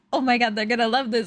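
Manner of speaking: put-on giggling while talking. Retelling picking up dog toys in a store: imitating own giggling while talking. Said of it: "like giggling".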